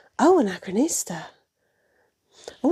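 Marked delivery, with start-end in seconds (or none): 0.2-1.2 deep, very low, sexy, sultry voice. Greeting a viewer by name: sexy voice. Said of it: "I said that all, all s-, all sexily".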